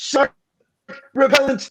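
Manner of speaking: high character voice with big pauses. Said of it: "You have to say it with the, the accent".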